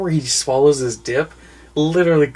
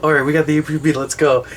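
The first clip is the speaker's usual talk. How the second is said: ordinary talk, nothing marked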